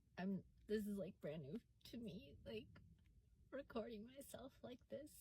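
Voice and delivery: tearful, crying voice. Recording themself like this for the first time, crying. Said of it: "I didn't expect to cry".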